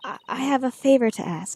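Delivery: hushed, half-whispered, quiet delivery. Game character hesitantly asking the listener for a favor, half-whispering. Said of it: "why are we whispering?".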